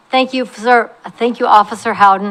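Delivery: choked-up, emotional voice catching a little. Speaker thanking an officer and the police chief, a little choked up. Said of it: "I'm a little choked up".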